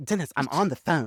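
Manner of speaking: slow, measured, unhurried, deliberate delivery. Retelling a TV episode scene, imitating Cordelia. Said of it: "And she's like".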